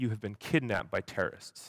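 put-on deadpan delivery. Speaker retelling a younger guy in the car turning to him, imitating a deadpan delivery. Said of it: "total deadpan face".

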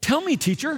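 high, insincere, plainly sarcastic fake eagerness. Imagining how Simon sounded speaking to the teacher: mock-sarcastic Simon voice. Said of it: "I think he might have sounded something like ... I'm guessing he wasn't quite sincere or teachable".

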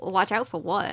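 ordinary talk

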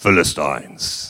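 very low, deep-voiced delivery. Telling the Israelites' story, naming their mortal enemies: deep voice on 'Philistines'. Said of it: "Just say it like that with a deep voice".

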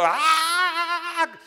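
put-on, high, light cry, "Ah" drawn out. Retelling how a woman selling things cried out; imitating a woman shouting. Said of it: "pero así gritó".

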